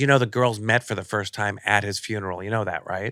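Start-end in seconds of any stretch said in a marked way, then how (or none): none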